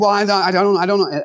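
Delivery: put-on stuttering, stammering speech. Retelling how a man answered when put on the spot, imitating someone stuttering. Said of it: "he was stuttering and stammering around".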